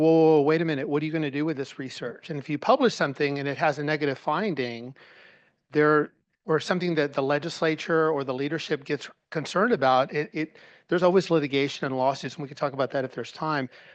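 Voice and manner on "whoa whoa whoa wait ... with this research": put-on paranoid, distrustful manner. Imitating how paranoid systems react to researchers: imitating a paranoid, suspicious reaction. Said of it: "systems are kind of paranoid or suspicious because they're like".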